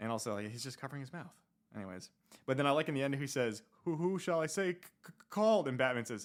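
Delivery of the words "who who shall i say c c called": high, loud stammer, tripping over each word. Reading out a comic character's line, imitating a stuttering character. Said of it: "stuttering over everything".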